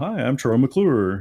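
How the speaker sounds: loud, slow, deliberate speech. Quoting the Simpsons character Troy McClure: Troy McClure voice. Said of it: "I try to mimic his voice".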